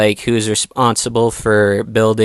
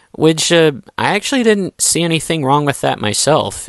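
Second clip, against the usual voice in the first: ordinary talk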